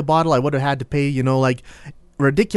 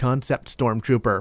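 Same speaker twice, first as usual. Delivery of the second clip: ordinary talk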